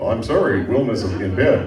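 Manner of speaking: ordinary talk, nothing marked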